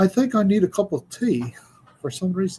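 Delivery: put-on high-pitched British accent. Quoting what someone says, the speaker does a british accent. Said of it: "great accent".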